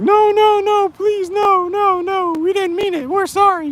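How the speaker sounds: tearful, whiny, begging tone, very high pitch. Imagining people making excuses after death, the speaker acts them out, mock crying, whiny plea. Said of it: "bitching and crying".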